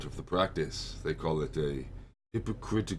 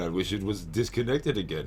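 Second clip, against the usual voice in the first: ordinary talk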